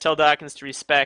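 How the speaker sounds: plain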